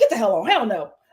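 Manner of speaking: upset, dismissive, acted-out tone. Retelling a reality show scene, imitating someone upset. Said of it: "he is so upset".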